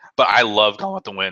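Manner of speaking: voice breaking. Talking about a favorite film, voice cracking. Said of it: "my voice is cracking".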